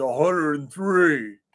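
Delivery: voice dropped very low, deep. Retelling a stranger behind them answering about their temperature: deep voice. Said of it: "in this deep voice".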